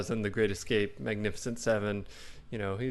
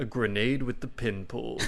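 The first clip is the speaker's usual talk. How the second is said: usual speaking voice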